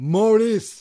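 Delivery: high-pitched, loud, belted yell. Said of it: "you yell".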